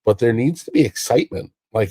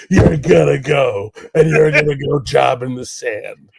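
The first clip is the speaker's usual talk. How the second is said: put-on rough, gravelly old man voice; 4 semitones higher than usual. Mocking the idea of one old boss giving orders: gravelly old man voice. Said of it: "one man with a gravelly voice and a pacemaker going".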